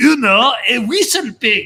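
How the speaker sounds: put-on very thick French accent, high and slow. Retelling what a man said to Raj, in a heavy French accent. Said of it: "in a very heavy French accent".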